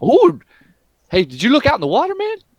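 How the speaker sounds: cartoon voice, very high, pitch swinging wildly. Voicing a character who comes over and asks about the water: voicing Donkey. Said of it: "Donkey's gonna, like, come over here to your side, and he's like".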